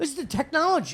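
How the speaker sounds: put-on screaming. Retelling telling a driver which route to take: retelling own screaming. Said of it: "Then I start screaming".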